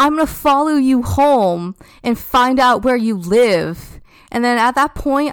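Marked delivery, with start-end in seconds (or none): 0.0-3.8 imitated screaming, higher pitch. Retelling a woman who followed them down the block: imitating someone screaming. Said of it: "she keeps screaming".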